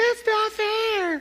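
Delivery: put-on soft, high, entitled, whiny little-girl voice. Telling a story, the speaker mimics a girl's complaint in an entitled whiny voice. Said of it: "that little whiny voice that you do when you're entitled".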